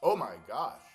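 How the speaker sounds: shrieking, very loud, high-pitched scream. Checking their position for viewers, screaming. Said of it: "Sorry for screaming".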